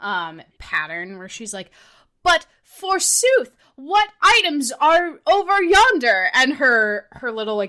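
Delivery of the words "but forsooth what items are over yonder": over-the-top theatrical, high, slow and loud. Describing how a game character talks: over-the-top theatrical Fischl voice. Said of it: "very over-the-top, theatrical".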